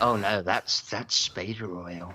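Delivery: slow, unhurried, drawn-out delivery. Joking about an actor's massage oil: imitating James Spader. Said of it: "and he'd be like".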